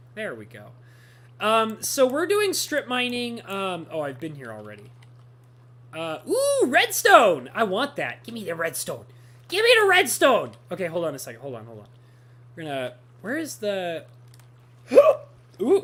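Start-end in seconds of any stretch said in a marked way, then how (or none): 12.5-15.8 speech broken by hiccups. Strip mining for redstone in a game, speaking with the hiccups. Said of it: "Got the hiccups".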